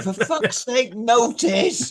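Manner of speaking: high-pitched, drawn-out, stretched exclamation. Playing an assistant exasperated at going unnoticed: Miss Jones voice. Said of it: "with Miss Jones practically with them out now, going".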